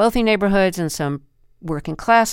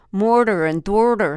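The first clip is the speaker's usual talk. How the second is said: exaggerated put-on Philadelphia accent. Admitting they can't get it right, trying an exaggerated Philadelphia accent. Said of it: "overly exaggerated Philadelphia accents".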